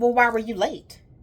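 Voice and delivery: loud, scornful, disdainful, looking-down-the-nose tone. Retelling a nail technician's question about lateness: imitating someone's disdain. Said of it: "with a great disdain".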